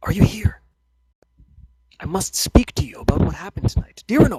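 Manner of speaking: small, soft, mousy voice, slightly high. A storyteller voices a speaker the listeners hear, in a soft mousy voice. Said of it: "relatively soft kind of what would be best described as mousy, so a little bit on the high pitched side".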